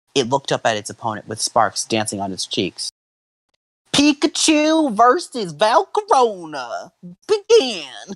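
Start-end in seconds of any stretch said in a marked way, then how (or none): 3.9-8.1 high, slow, cringy referee-style announcer voice. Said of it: "I love this voice".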